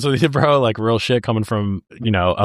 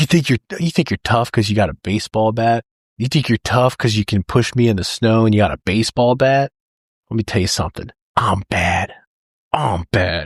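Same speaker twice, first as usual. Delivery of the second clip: mock-furious, angry outburst. Retelling a favorite movie line, imitating a furious outburst. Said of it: "he's super pissed".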